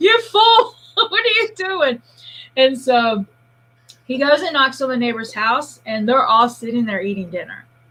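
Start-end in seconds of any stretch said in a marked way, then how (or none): 0.0-2.0 play-acted, very high, exasperated shout. Retelling a chase, the speaker recalls calling after the man running off: retelling a yell. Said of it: "And I'm yelling at him".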